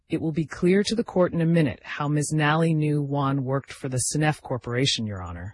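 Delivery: ordinary delivery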